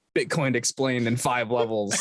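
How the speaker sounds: ordinary talk, nothing marked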